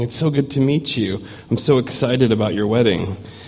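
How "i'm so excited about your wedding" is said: normal talking voice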